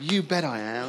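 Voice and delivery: corny, all-in, super cheesy American enthusiasm. Showing the audience the answer to give: super cheesy American style. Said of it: "In a super cheesy American style".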